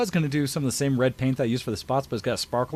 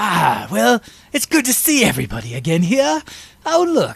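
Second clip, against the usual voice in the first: loud, somewhat gravelly villain voice; 7 semitones higher, 8 dB louder than usual. Describing his pun-making serial-killer costume character, in a somewhat gravelly character voice. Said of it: "he uses a somewhat gravelly voice where he's just like".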